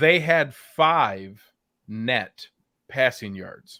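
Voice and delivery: slow, deliberate delivery, spelled out word by word. Repeating a stat a second time for emphasis: said slowly. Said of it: "I'm gonna say that again slowly".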